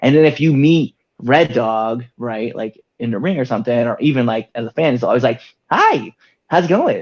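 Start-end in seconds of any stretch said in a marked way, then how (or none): 5.7-7.0 mock super high-pitched, high-energy hyped voice. Showing how your in-ring persona always greets a fan, super high pitch, super high energy. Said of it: "Like super high pitch, super high energy".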